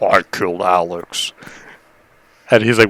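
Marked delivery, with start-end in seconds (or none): 0.0-1.3 eerie put-on demonic voice, not his own. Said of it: "a demon voice came out of me".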